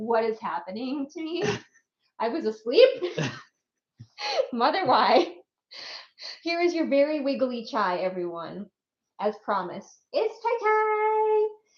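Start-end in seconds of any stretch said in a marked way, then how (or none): 0.0-5.3 baffled, bewildered put-on pet voice. Voicing the pet ferret's thoughts: voicing the ferret, baffled. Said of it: "Her baffled expression, like".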